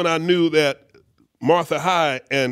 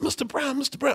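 high, soft, hushed, urgent voice. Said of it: "He's like".

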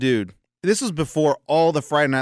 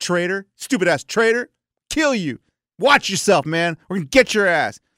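mild, held-back, mock jeering, threatening yell; 4 semitones higher than usual. Retelling how football players threatened him at his old school, acting out their yelling. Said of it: "they were yelling".

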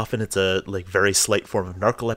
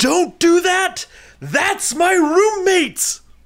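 very high, shrill, drawn-out, full-volume scream; 7 dB louder than usual. Seeing someone about to throw a shoe at the roommate, the speaker is retelling a scream. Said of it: "I scream at the top of my lungs".

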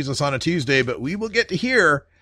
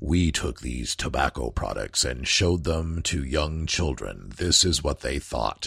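very deep, low, hushed, sinister evil narrator voice; 14 semitones lower, 6 dB quieter than usual. Recounting an anti-tobacco ad with young children, doing the narrator's mock-evil voice. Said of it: "And you got the evil voice".

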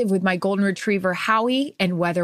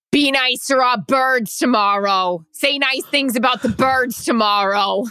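put-on New Jersey and Philadelphia local accent; 4 semitones higher, 4 dB louder than usual. Asked for a last Jersey accent, quoting what a Philly fan told them, in a Jersey accent. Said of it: "Give us your last Jersey accent".

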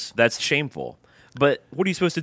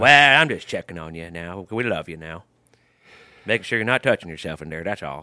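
put-on, laid-on Alabama accent; 6 semitones lower than usual. Checking on someone in the bathroom, speaking in an Alabama accent. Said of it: "everybody in Alabama talks that way".

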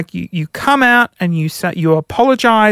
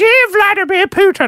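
very high, squeaky cartoon voice; 11 semitones higher than usual. Riffing on a Pepsi ad with a co-host, speak in a Mr. Hankey voice. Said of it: "Why do I sound like Mr. Hanky?".

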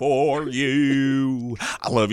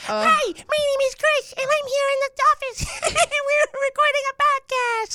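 very high, silly, goofy put-on voice. Told he should be a voiceover actor, the speaker shows off a put-on silly voice. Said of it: "I can do voices like".

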